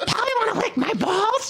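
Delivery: very high-pitched talking-parrot voice. Joking about a parrot, the speaker does an Elmo-like parrot voice. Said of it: "I sound like Elmo".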